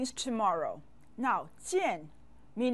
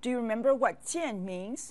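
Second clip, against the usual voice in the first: usual speaking voice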